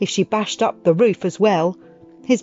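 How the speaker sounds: ordinary delivery, nothing marked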